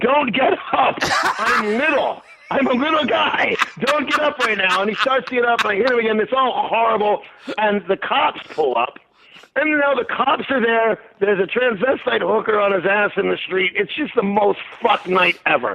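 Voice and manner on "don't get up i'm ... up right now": put-on, urgent, half-strength mild shout. Retelling a fight, telling a man not to get up: retelling a scream. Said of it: "I'm screaming".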